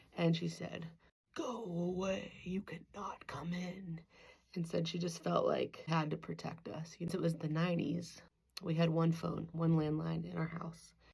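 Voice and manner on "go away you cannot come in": slow, menacing sci-fi villain voice, words dragged out. Retelling how her mom answered someone at the door, Darth Vader voice. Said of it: "using her most Darth Vader-y voice possible".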